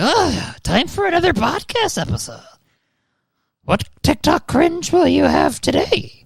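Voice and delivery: very high, swooping goblin voice. Imagining a medieval goblin assistant who hobbles around: poor medieval goblin servant voice. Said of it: "He just lives in the studio, and he's like".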